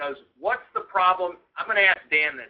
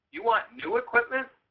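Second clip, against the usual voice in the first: high, skeptical, probing, doubting tone; 6 semitones higher than usual. Recalling asking them whether they want new equipment, acting out a questioning tone. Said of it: "with a questioning tone in my voice".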